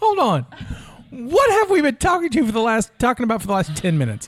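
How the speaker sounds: high, loud, incredulous outburst.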